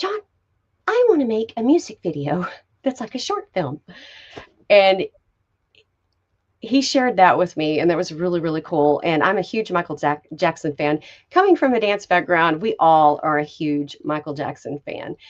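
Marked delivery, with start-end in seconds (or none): 0.0-3.8 small, high-pitched voice with swinging, swooping tune. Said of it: "he got this little high-pitched voice".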